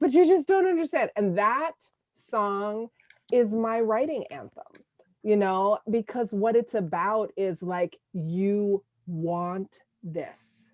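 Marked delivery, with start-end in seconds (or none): 0.0-1.1 mock very high, teary, rushed crying voice. Recalling crying on the plane to Jamaica with him: retelling her own crying. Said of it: "and I'm crying".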